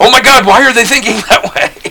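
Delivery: mock very high, alarmed, panicked worried fretting. Speaker mimicking the listener's usual tone of voice, mock-panicked tone. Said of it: "there's always this tone in your voice".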